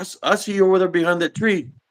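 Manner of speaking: put-on high-pitched yelling. Retelling how mom confronted a figure by a tree: imitating mom yelling. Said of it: "she's yelling through the sidewalk".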